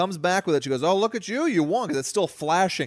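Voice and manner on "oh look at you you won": put-on sassy woman voice, higher. Retelling what a lady who served drinks asked: imitating a sassy woman. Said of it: "big sassy broad".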